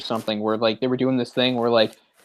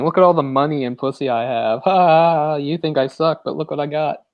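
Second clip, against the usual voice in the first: taunting, gloating boastful tone with laughter; 3 semitones higher than usual. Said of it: "[name] laughing at the world, going".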